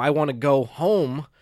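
normal talking voice

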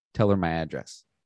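plain

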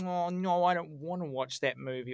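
usual speaking voice

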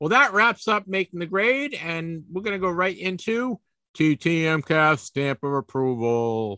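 slow, drawn-out radio-style announcer voice. Show host moving into the next segment, in an announcer voice. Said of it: "Did you like my announcer voice there?".

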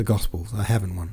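ordinary delivery, nothing marked

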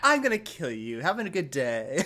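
put-on politely menacing tone. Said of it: "his polite banter".

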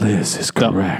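airy, breath-heavy, low, breathy voice. Asked to say the line again, the speaker tries it in a breathy voice. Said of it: "Let me get breathier".

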